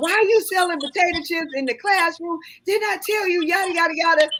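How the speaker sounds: mock, very high, animated scolding yell. Retelling scolding a seventh grader over selling chips in class: retelling own past yelling. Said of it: "I'm yelling at him".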